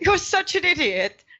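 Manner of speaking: very high pitch, laughing through the words. Voicing a character who laughs at another character: chuckling while talking. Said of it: "while he chuckles like".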